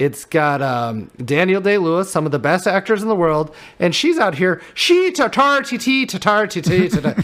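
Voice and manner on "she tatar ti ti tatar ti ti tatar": high, bad, mock Irish accent. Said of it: "worst Irish accent ever put on film".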